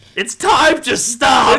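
put-on yelling. Repeating a joke line along with the others: put-on yelling. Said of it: "Why are we yelling?".

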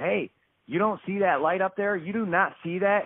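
mock eager yell. Retelling calling out to a man at a gas station, retelling an excited yell. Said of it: "i started yelling at him not frantically but just".

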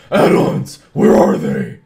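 very loud, booming superhero voice. Reading aloud an all-caps line from the notes: Batman voice. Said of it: "[name]'s doing the Batman voice".

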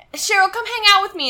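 put-on very high little-kid voice. Retelling a scene where Jason asks Cheryl to hang out: imitating Jason like a little kid. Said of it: "he talks like a little kid".

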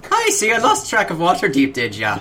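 put-on Irish accent. Player, in character, walks over to three companions and speaks, Irish accent. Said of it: "I'm too self-conscious about my Irish voice".

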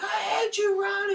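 very high, very slow, furious raging cry. Retelling a couple always fighting on TV, imitating Sammy raging at Ron. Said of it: "raging on each other".

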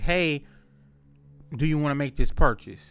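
ordinary talk, nothing marked

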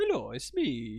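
soft, cartoonish plumber voice. Taking turns doing cartoon voices, one speaker tries again: Mario voice. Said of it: "That's Mario".

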